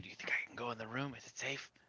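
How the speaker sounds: wary, hushed, very quiet whisper. A player's character asks Elmark whether a room is safe, whispering. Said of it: "I'm whispering".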